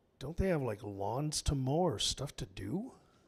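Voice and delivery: put-on muttering under breath. Retelling what the building committee man said under his breath: imitating muttering. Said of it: "under his breath saying".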